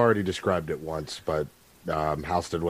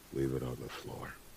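very quiet, dead-level, flat monotone; 4 semitones lower, 11 dB quieter than usual. A man sitting with his back to the wall answers, very monotone. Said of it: "in a very, very monotoned voice".

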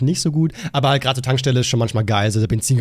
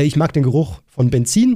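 plain

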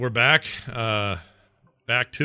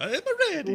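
put-on Italian accent voice, higher. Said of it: "Is he Mario all of a sudden?".

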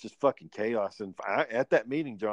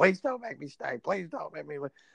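put-on childlike, desperate, mild pleading wail; 4 semitones higher than usual. Retelling a girl's plea not to be sent to her dad: imitating a girl screaming. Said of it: "but she was screaming".

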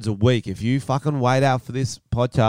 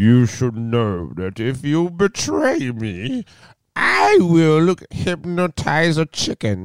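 put-on old man voice, slow, swooping pitch; 3 semitones higher than usual. Attempting a Thor quote for comparison: old man character voice. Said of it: "That sounded like your old man character".

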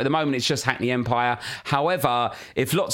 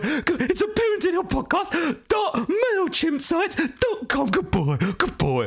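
put-on dog voice, much higher and slower. A podcast host gives out the mailing list address in a dog voice. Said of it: "In your dog voice".

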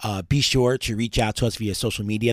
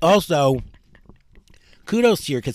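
chewing while talking, much higher pitch; 6 semitones higher, 5 dB louder than usual. On air, praising the other host's kids while talking while eating a grape. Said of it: "Sorry, I'm eating a grape".

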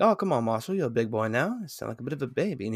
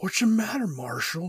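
distorted, warped voice, pitched up; 8 semitones higher than usual. A speaker retells what a doctor says, imitating a distorted doctor voice. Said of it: "the doctor's voice get real distorted".

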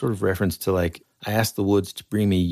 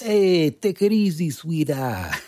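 put-on New Jersey cop accent, much higher; 9 semitones higher than usual. Imagining a casting call for a New Jersey cop, answering in New Jersey cop accent. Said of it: "there's like a casting call for New Jersey cop".

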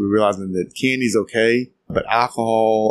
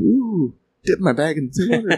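joking little English guy voice, high and slow; 8 semitones higher than usual. Joking about steeping grain like a tea bag: put-on English accent. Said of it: "little English guy going".

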